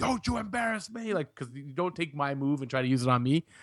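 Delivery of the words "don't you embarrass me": high, furious, shouted yell. Retelling a wrestling moment, quoting Sheamus: imitating Sheamus yelling. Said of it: "he's yelling".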